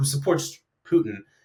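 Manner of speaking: ordinary talk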